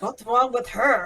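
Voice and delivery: indistinct, mumbled words. Voicing a character reacting to someone who walked away: mumbling.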